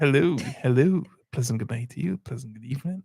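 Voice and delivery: put-on radio broadcaster voice. Saying good night to a favourite couple, in a radio voice. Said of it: "the radio voice coming up".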